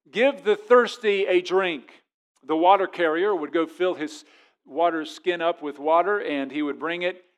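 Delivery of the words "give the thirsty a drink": imitated loud cry, higher and louder. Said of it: "he would say with a loud voice".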